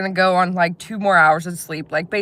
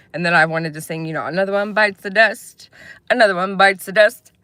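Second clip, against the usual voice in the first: normal talking voice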